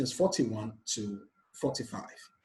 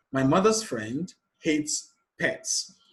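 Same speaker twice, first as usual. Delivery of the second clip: "friend" stressed and said slowly. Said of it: "The stressed word here is friend".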